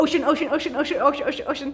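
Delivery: ocean rattled off over and over, as fast as possible. Leading viewers at home through a clapping rhyme; saying ocean very fast. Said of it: "Let's say ocean as fast as we can".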